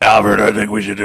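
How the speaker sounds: loud, phony, scratchy voice. Mocking how Batman talks to Alfred, doing the phony Batman voice. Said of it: "put on the phony Batman voice".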